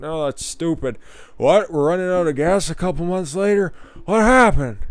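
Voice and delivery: mocking put-on impression voice.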